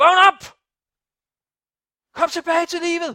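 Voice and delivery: loud, high-pitched shouting.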